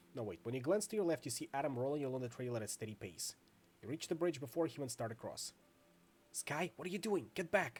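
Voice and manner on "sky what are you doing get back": tense, hushed, pitched up. Reading a second-person story, a man urges the reader to get back, hushed voice. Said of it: "he says in a hushed voice".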